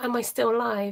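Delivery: ordinary talk, nothing marked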